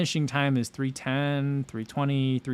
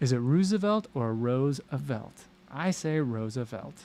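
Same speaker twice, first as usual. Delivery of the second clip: ordinary talk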